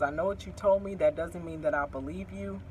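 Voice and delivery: plain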